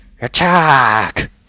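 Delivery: terrible, high-pitched goblin creature voice. Narrating a game scene, the speaker voices an attacking goblin: bad goblin voice. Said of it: "That was a terrible goblin voice".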